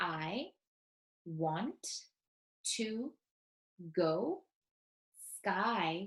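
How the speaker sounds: deliberate, slow, halting, each word counted out. Repeating an example sentence while counting the words, slowly, word by word. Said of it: "I'll say it again slowly while I count".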